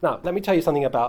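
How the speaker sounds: ordinary delivery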